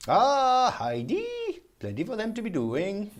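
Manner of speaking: put-on Scandinavian lilt, very high and swooping. Pick up after the handover back to the studio, in a very sad Scandinavian accent. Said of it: "Very sad Scandinavian accent".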